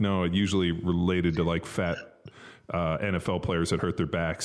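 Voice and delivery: ordinary talk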